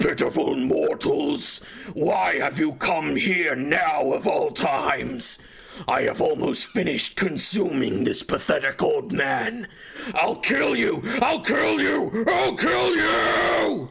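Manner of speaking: enraged, slow, swooping demonic roar. Narrator voices the spirit consuming an old man, addressing the mortals who came. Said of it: "As the demonic voice roars in rage".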